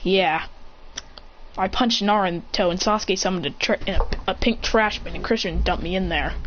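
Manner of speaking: plain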